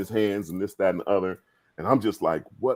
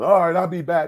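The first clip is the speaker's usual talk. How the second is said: put-on loud hollering, voice pitched way up high; 10 semitones higher, 5 dB louder than usual. Retelling hearing a teammate arrive in the locker room: imitating Barkley yelling. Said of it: "I hear him yelling".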